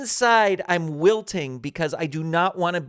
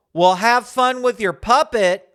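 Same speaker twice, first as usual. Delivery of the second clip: high, quick, mocking and condescending tone; 4 semitones higher, 6 dB louder than usual. Retelling what a girl said to the speaker carrying a puppet, imitating a mocking, condescending voice. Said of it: "in a real sort of mocking, condescending voice says".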